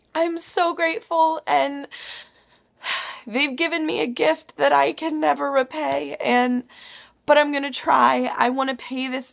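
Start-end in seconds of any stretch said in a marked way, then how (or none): 0.1-8.3 tearful voice, crying through the words. A woman thanking some ladies for a gift she was given, crying while talking. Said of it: "I said I wasn't gonna cry".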